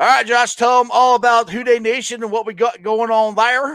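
Southern man's accent with twang.

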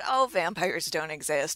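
ordinary talk

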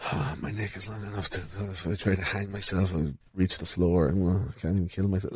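mock moping, glum, morose cartoon dinosaur voice. Describing a cartoon dinosaur whose girlfriend breaks up with him, mock-morose dinosaur voice. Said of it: "and he gets really morose".

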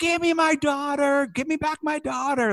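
put-on, very high, freaked-out, frantic shriek. Retelling a movie scene of a woman grabbed at a party: imitating someone screaming. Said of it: "kicking and screaming and punching".

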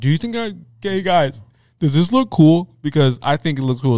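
needy, attention-hungry, bragging show-off tone. Mocking a truck owner who keeps asking if his truck looks cool: imitating a show-off truck owner. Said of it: "he's literally asking everyone that question".

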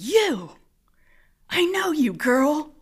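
intense, high, loud, eerie call-out. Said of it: "she said".

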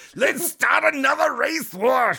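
very high-pitched fake German accent. Asked to give a german accent, the speaker tries one: german accent. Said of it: "Can you give me a German?".

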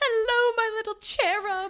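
very high, loud British nanny voice. Retelling a scene where Jay plays a nanny: imitating Jay's British accent. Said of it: "with a British accent".

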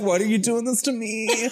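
high, whiny, far-off-sounding whimper.

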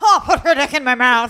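put-on very loud Scottish accent, old granny voice. Retelling what a scottish old lady in a video says: imitating a scottish old lady. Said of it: "this fucking Scottish old nana".

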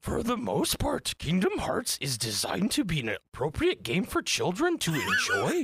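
put-on high voice with big swoops. Reading a passage aloud to keep from laughing, in a Yoda voice. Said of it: "I'm going to read it like Yoda voice".

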